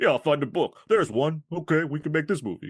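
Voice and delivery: easygoing film-star voice, casual and offhand. Joking about how a script got written: imitating Stallone. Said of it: "Stallone wrote the script, like".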